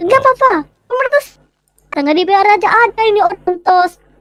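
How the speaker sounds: high-pitched, fired-up rant. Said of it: "Oke, dia semangat banget".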